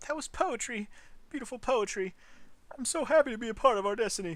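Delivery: crying, choked up, tearful voice. After a long patriotic broadcast ends, a listener calls it poetry, crying, choked up. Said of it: "Are you crying".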